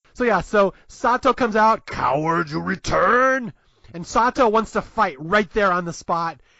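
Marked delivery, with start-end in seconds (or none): 1.9-3.6 cartoon puppet monster voice, fully committed. Recapping a movie, quoting a character's challenge in a Cookie Monster voice. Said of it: "launches into his Cookie Monster voice".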